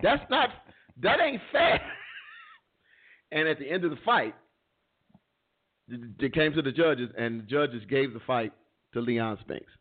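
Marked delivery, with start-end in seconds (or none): 0.0-1.8 yelled scream, much higher-pitched. Retelling watching a boxing match on TV, retelling screaming at the TV. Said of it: "I'm like screaming at the TV".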